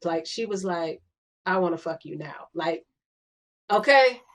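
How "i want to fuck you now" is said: soft, hushed, suggestive half-whispered stage whisper. Retelling what she half-whispered on the dance floor: imitating a half-whisper. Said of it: "she whispered that".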